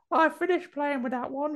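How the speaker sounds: put-on very high, creepy, spooky British little girl voice. Speaker describes an infected kid character, quoting her in a spooky british kid voice. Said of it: "she does like a spooky British kid".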